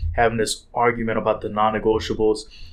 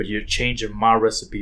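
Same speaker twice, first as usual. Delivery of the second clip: ordinary talk, nothing marked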